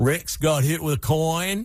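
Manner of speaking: homespun folksy dialect. Retelling what Roy Williams said after a game, in a Roy Williams accent. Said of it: "Roy Williams had this accent, this dialect".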